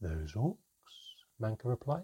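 ordinary delivery

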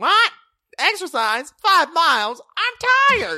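very high, piping, goofy, funny voice. Mocking how Shannon tells jokes, in Shannon's weird funny voice. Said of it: "she'll tell jokes in her weird funny voice".

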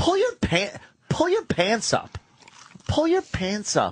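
voice dripping with disgust. Retelling what someone said about pulling pants up: imitating a disgusted tone. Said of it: "the tone of voice was disgust".

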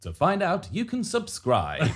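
TV commercial announcer voice. Asked by a co-host for their best commercial, speaker uses a PPI advert voice. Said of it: "Got your PPI advert voice".

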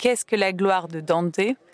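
ordinary talk, nothing marked

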